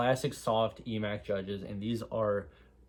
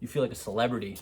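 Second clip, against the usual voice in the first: ordinary delivery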